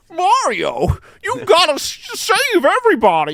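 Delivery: very high, loud character voice. Asked how their character sounds, giving a preview as Toadsworth. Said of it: "heard the preview of Toadsworth".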